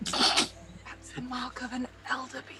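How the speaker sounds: whispered out the corner of the mouth. Player's character, pulling the captain away from a woman, whispering out the corner of her mouth. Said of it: "She's like whispering out the corner of her mouth".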